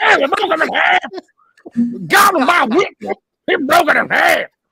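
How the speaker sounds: shrill, very loud, high commentator shout. Imitating a wrestling commentator calling a match: j r impression. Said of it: "both the best and worst J R impression".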